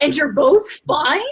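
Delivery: put-on shocked, disbelieving, incredulous shout. Retelling how a high school biology teacher reacted, retelling an incredulous yell. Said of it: "she just literally yells".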